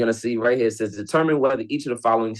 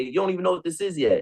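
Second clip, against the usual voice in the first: mock, aggressive, pushy and pitched up; 7 semitones higher, 3 dB quieter than usual. Acting out a rep answering a customer at the door, imitating an aggressive salesperson. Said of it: "That's aggressive right there".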